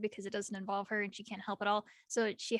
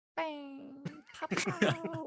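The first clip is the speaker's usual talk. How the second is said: mock bored flat delivery, higher pitch; 5 semitones higher than usual. Acting out a character idly shooting into the air: imitating a bored-sounding voice. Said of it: "literally the most bored sounding".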